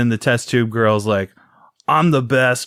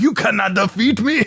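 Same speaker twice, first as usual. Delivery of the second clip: shrill, very high, over-the-top fake Russian villain accent; 10 semitones higher than usual. Describing an American actor's movie villain, in a heinous fake Russian accent. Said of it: "putting on like the most heinous Russian accent".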